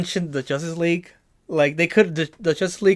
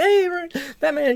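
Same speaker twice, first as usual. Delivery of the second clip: put-on young-sounding voice, pitched a touch higher; 10 semitones higher than usual. Imitating Michael Cera's Robin calling out to Batman: Michael Cera's young Robin voice. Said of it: "He has that young voice".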